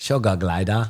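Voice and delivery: clumsy, bad, fake put-on Australian accent. Asked to say sugar glider in Australian: bad put-on Australian accent. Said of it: "can you say sugar glider with an Australian accent?".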